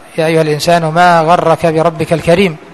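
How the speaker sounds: usual speaking voice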